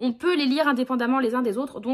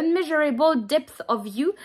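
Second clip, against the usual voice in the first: slow put-on English accent, a careful attempt; 3 semitones higher than usual. Reading an English book title aloud: English accent. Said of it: "Je vous sors mon meilleur accent anglais".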